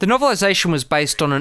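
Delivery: plain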